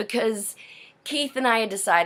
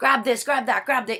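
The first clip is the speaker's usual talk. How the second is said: shouting in a higher pitch; 5 semitones higher than usual. Retelling a rushed moment, the speaker repeats what they shouted; retelling shouting orders. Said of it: "And I'm shouting".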